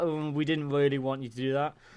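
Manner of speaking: plain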